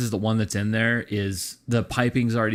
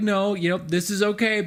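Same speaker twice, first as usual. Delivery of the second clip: put-on teary voice fighting back tears, pitched higher; 10 semitones higher than usual. Retelling a phone call from Jess, imitating Jess holding back tears. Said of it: "tears a little bit ... kinda fighting it back".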